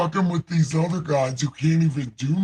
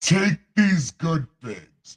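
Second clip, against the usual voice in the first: put-on divine, heavenly deity voice. Reading a scripture passage aloud, in a God voice. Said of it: "I got to do it with God voice".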